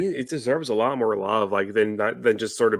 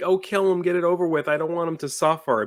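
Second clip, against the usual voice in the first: mock crying, higher pitch; 7 semitones higher than usual. Retelling what a movie character said: imitating someone crying.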